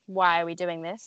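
usual speaking voice

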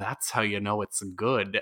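put-on whisper. Retelling a friend's whisper during a movie as a studio logo appeared, imitating a whisper. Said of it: "just whispered".

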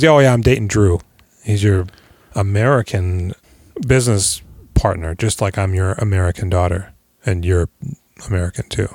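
usual speaking voice

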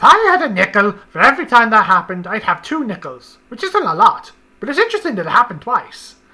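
very loud mad-scientist voice with swooping pitch. Speaker announcing and then performing his best Doofenshmirtz impression. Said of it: "I'm going to do my best Doofenshmirtz impersonation".

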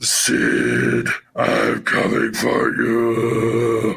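very slow, drawn-out, rough, creaky delivery. Imitating a famous botched wrestling promo: Shockmaster impression. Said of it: "he was going".

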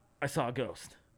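put-on out-of-breath speech. Retelling a friend running in to report a ghost: imitating someone out of breath. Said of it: "just out of breath".

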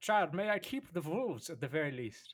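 attempted put-on German accent. Speaking to a child in a scene, in an attempted german accent. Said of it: "that was a German accent that I was attempting to do".

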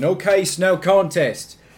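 bad Australian accent, loud and slow. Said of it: "I'm gonna keep doing my bad Australian".

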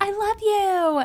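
mock very high, loud yell. Recapping a couple's breakfast, the speaker retells her yell. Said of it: "and then she yells".

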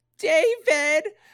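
piercing, shrill, very high calling-out. Retelling how a mother calls out a name: imitating mom's shrill voice. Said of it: "my mom has that very distinct, shrill voice".

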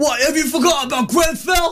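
very high, pointed, challenging tone. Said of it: "it's a [name] thing".

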